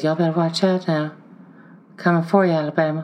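soft falsetto whisper. Recalling what a giant Vandy guy said before last year's game: soft falsetto whisper. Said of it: "falsetto giant Samoan guy who talks with like a soft whisper".

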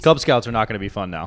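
ordinary talk

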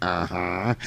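light, teasing tone. Retelling a ghostly answer to a question: imitating a teasing reply. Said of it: "she's kinda teasing".

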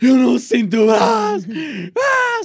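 very high, loud, slow, drawn-out rising panicked scream. Speaker re-enacts waking up with a numb arm, retelling a panicked scream. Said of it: "eu tipo gritei do género".

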